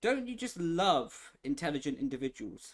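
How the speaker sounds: heavily sarcastic, mocking, tongue-in-cheek tone. Reacting to a crash in an online race: sarcastic. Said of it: "And there's my sarcasm".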